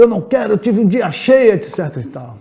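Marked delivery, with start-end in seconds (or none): 0.0-1.5 very high-pitched, loud shouting. Acting out a man who comes home and shouts at his children, imitating a man shouting. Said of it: "E fala alto".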